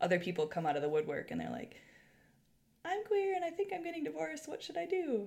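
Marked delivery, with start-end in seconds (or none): 2.8-5.3 tiny, very high-pitched little voice. Imitating people who come out asking for advice, in a high-pitched little voice. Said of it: "these people have all high-pitched little voices".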